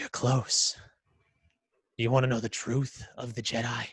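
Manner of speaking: echoing, reverberating voice. Narrating a scene, voicing a figure whose voice echoes through the hallways: echoing voice. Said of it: "you hear his voice echoing".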